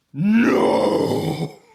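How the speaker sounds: booming, thunderous, very loud monster roar. Voicing a huge creature refusing a command: booming monster roar. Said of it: "it fucking quakes past you and shakes some of the houses".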